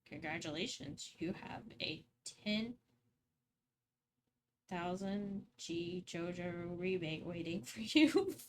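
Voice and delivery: low, slow, automated robotic voice. Speaker acting out a scam phone call they received: robotic voice. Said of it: "Robotic voice on the other end?".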